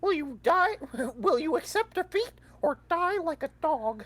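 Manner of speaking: squeaked out at a very high pitch. Told not to use it, answering anyway in a Mickey Mouse voice. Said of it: "I can say whatever I want in a Mickey Mouse voice".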